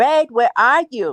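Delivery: slow, unhurried, drawn-out woman's voice. Retelling a late-night phone call, imitating Tisha. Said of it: "I gotta say it like her".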